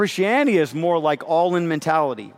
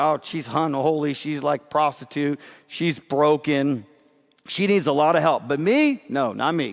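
normal talking voice

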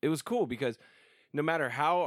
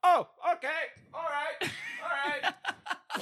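put-on drunk talk, pitched very high. Retelling a drunk friend named A-dub at the bedroom door: imitating drunk A-dub. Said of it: "drunk A-dub".

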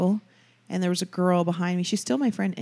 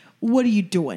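put-on mobster voice; 4 dB louder than usual. Recalling how she talked after watching the show back then, in Sopranos-style talk. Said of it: "I would come around talking like".

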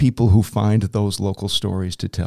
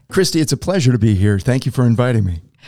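classic on-air radio announcer voice; 2 semitones higher than usual. A TV anchor, welcomed as a guest, thanks the host, in radio announcer voice. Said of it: "I love that radio voice".

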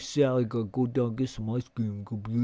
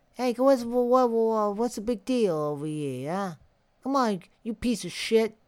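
put-on Brooklyn or Bronx accent, much higher; 9 semitones higher than usual. Imitating actors in New York-made summer camp movies, in a Brooklyn or Bronx accent. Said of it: "total like fucking Brooklyn or Bronx".

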